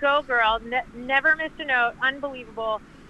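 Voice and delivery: ordinary talk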